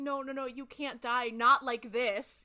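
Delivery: full-throated shouting outburst. Retelling a scene where Sam's brother dies in his arms: imitating Sam shouting. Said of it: "shouting too".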